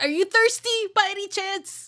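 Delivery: very high, weepy, tearful creature voice. Narrating a scene where a crying eye looks up at you: crying eye creature voice. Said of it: "eye is now crying and looks up at you and says".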